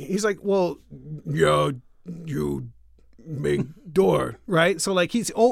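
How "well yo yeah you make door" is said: monster voice. Telling a story, the speaker voices Marv, the invisible man, like Frankenstein's monster. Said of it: "he still kind of talks like a you know Frankenstein's monster".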